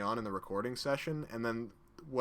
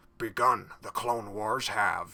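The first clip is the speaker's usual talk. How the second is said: earnest, slow delivery with raised voice; 5 dB louder than usual. Showing a more serious take on a character, in an earnest Yoda voice. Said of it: "like earnest Yoda and just be like".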